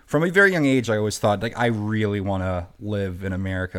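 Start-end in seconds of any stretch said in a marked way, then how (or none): none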